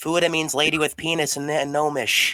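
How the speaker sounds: high put-on character-voice shout. Calling after a departing character in the game: in-character shout. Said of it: "I shout".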